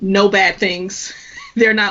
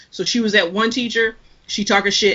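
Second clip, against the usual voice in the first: usual speaking voice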